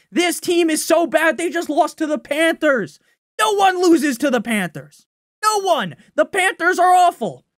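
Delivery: furious, fed-up, high, angry yelling. Sports fan venting to listeners about their team, angry yelling. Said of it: "Sorry for yelling".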